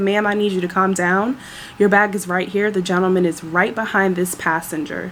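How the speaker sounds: plain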